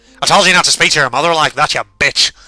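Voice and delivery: put-on pronounced Irish accent. Reading the mother's lines in a story: mother voice, pronounced irish accent. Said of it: "an even more pronounced Irish accent".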